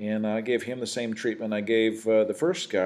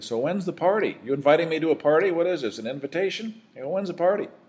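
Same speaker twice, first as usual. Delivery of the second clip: lighthearted, teasing, pitched-up joking tone; 6 semitones higher than usual. Retelling a joking question put to an officer who offered to sign, retelling a joking remark. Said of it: "I kind of jokingly said to him".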